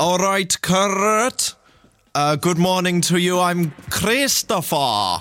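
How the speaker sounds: put-on Welsh accent, pitched high, a name drawn out long. Showing accents to an audience, in a welsh accent. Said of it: "That was a Welsh accent there".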